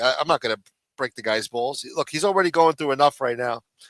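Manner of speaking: normal talking voice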